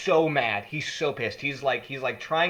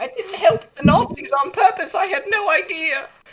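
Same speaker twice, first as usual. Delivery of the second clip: very high, loud mock crying with pleading tone; 8 dB louder than usual. Acting out a scene from a book, imitating Yasmin crying.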